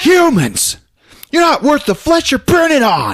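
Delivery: put-on angry yell. Telling a story about people watching from a window, the speaker does a mock-angry Billy Zane yell. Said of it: "He's all pissed off".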